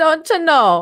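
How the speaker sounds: very high-pitched attempted Canadian accent that sounds Jamaican. Retelling their try at a Canadian accent that came out Jamaican. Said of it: "that sounds Jamaican".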